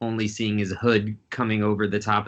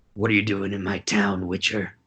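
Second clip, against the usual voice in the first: rough, gruff, low-pitched voice. Game master voicing a small hooded figure confronting the witcher, gruff deep voice. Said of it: "you hear a gruff, deep voice".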